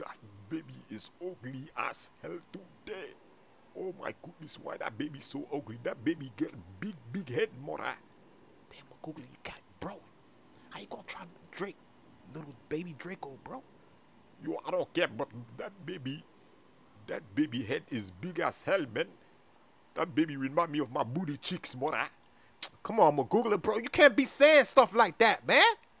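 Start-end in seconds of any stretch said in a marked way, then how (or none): 0.0-13.6 soft, hushed whisper close to the ear. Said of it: "I want to whisper something in your ear".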